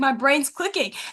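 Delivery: acted earnest, solemn manner. Speaker recounting standing in front of dad, retelling being dead serious. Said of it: "like dead serious".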